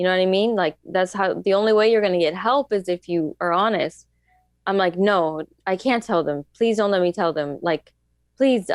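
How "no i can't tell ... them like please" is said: put-on pleading, begging voice. Retelling begging the older men not to tell: retelling own begging. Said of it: "I was begging them".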